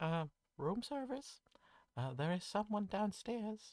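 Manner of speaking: very high, tiny, sweet small voice. Retelling a knock at the door, imitating the visitor's sweet, small voice. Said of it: "a very sweet, small voice".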